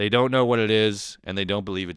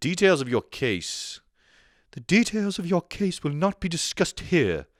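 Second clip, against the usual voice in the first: put-on posh British accent, slightly higher pitch; 8 semitones higher than usual. Imagining a high-powered lawyer named Karina Barone, in a posh British accent. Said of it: "Is she British?".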